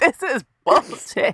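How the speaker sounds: put-on New York accent. Quoting a man from new york who said it, in his new york accent. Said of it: "because his fucking accent".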